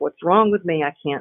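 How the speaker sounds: normal talking voice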